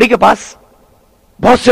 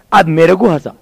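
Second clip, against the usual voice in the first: ordinary delivery, nothing marked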